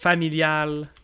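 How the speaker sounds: French Canadian accent. Listing car types, saying the word as in French Canadian: French Canadian accent. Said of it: "my French Canadian accent on the stream".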